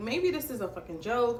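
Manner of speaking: ordinary delivery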